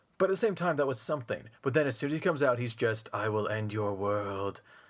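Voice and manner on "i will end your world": slow, flat, deadpan, intimidating villain drone. Describing Victor Von Doom once he comes out, monotone Victor Von Doom voice. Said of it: "I talk in monotone".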